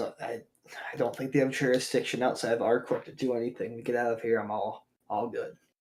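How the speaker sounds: hushed, faint, barely-there, very quiet whisper. Voicing his character in a group story, whispering. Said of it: "He whispers".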